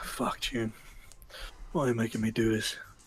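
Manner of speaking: muttered whisper under the breath. Voicing a character alone by a chair: whispering under his breath. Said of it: "he's gonna whisper under his breath".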